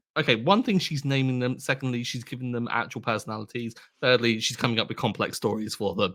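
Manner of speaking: ordinary talk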